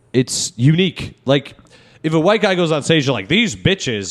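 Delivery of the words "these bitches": ordinary delivery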